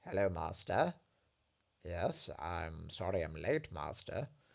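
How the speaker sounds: cold, very low, slow British accent. Speaker pictures how a young Dooku would talk; cold British accent as Dooku. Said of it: "that horrible cold British accent".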